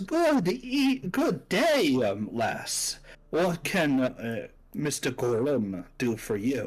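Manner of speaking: very proper, performed, swooping theatrical voice. Voicing a theater director greeting a bard with a sweeping bow: very proper, performed greeting. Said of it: "very proper and very performed".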